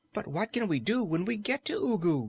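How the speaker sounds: anxious, fretful tone. Narrator reading a character's question about reaching ugu, anxious. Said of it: "inquired the Cookie Cook anxiously".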